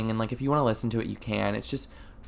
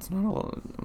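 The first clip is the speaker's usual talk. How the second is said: whispery, breathy voice breaking mid-line; 10 semitones higher, 4 dB quieter than usual. Admitting the podcast gets few plays, voice cracking. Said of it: "My voice just cracked".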